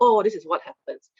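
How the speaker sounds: normal talking voice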